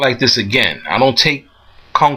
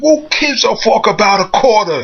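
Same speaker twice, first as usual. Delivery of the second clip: put-on pitched-up Italian accent with broken English; 8 semitones higher than usual. Retelling what Gino the shop owner said, in Gino's Italian accent. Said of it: "his Italian accent".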